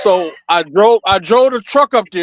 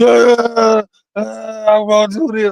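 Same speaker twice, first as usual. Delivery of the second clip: put-on boohoo crying, sobbing speech; 3 semitones higher than usual. Retelling what an arrested girlfriend said while boohoo crying: imitating someone boohoo crying. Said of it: "now she's boohoo crying, snot everywhere".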